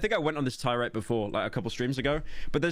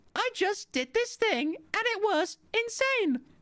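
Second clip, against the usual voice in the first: put-on very high social-media influencer girl voice. Discussing how creators sound online, demonstrating: TikTok girl voice. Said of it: "TikTok girl voice".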